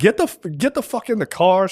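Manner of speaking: mild mock yelling in a mother voice. Retelling what a mother said to her child: imitating a mother yelling. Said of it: "yelling at her kid".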